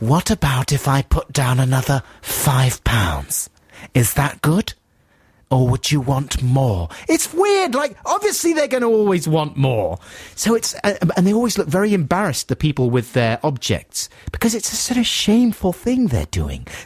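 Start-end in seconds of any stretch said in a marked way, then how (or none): 0.0-6.9 mock flamboyant, camp TV presenter voice. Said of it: "he kind of talks like this".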